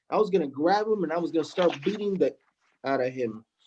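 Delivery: plain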